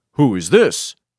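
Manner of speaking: authoritative, commanding voice. Voicing Russell as he answers a phone call that may be a prankster, in a commanding voice. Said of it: "in the same commanding voice".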